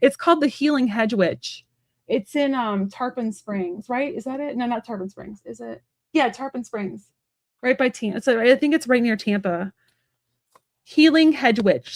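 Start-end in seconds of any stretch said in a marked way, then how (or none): 10.8-12.0 slow, careful repetition of the name. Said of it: "Sorry, I talk fast".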